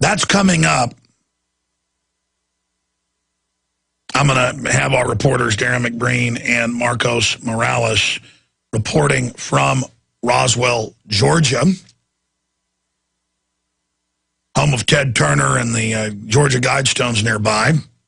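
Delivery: labored, struggling speech, voice mostly gone. Host introducing the show's reporters while his voice is going, labored, hard to talk. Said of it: "It's just laborious to talk".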